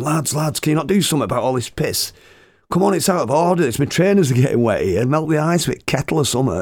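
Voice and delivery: high-pitched, complaining, hollered shout. Retelling shouting at the lads from the front of the bus: retelling own shouting. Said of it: "and I'm shouting".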